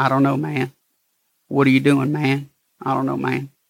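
flat, level twangy monotone with no pitch lift. Retelling how a man used to imitate his way of talking, mocking twangy monotone. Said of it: "he would imitate my twang monotone".

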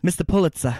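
put-on old-time New York newsboy accent. Saying a name how they'd say it in Newsies, old New York accent. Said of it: "That's how they'd say it in Newsies".

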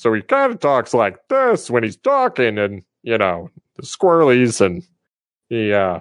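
weird, goofy, army-style ranger voice with swooping pitch. Showing how his character talks after relistening to his recording, in Ranger Bob voice. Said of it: "this is the voice of Ranger Bob".

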